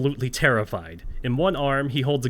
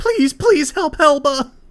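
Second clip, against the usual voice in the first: frantic, shrill, hysterical shriek, very high and loud; 9 dB louder than usual. Voicing hysterical goblins begging the players: hysterical screaming plea. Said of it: "screaming at you, pleading at you".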